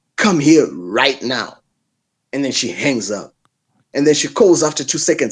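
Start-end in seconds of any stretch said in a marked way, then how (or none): 0.2-1.6 mock-angry voice, much slower. Retelling how she ordered him over the phone, imitating an angry order. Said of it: "You know that angry voice".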